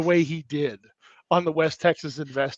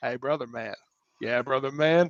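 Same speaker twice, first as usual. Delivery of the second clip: put-on low-pitched Texan accent; 4 semitones lower, 8 dB quieter than usual. Imagining two brothers from West Texas talking: Matthew McConaughey impression. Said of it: "it's the same voice, it's the same accent".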